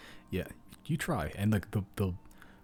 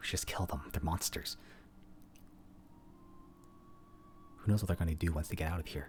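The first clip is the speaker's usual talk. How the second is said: whispered through clenched teeth; 6 dB quieter than usual. A player, voicing Clover when consulted by the party, whispers through gritted teeth. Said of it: "Clover sort of just whispers, sort of gritted teeth".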